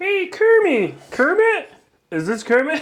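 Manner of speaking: very high voice with swinging pitch. Trying an impression on a show after others bring it up, Kermit the Frog voice. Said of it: "That was not bad".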